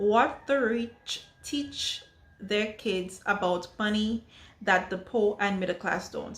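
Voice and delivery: very slow, careful, word-by-word reading. Reading a favorite book's subtitle aloud, reading very slowly. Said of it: "I had to read that very slow".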